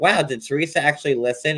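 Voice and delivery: plain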